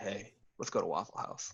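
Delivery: very quiet, hushed whisper. Retelling asking a friend to go out: retelling a whisper. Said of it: "I would whisper to Dimitri".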